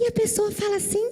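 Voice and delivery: high, sweet, cute teddy-bear voice.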